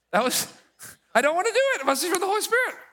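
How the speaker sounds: mock reluctant outburst, very high, loud, blurted out.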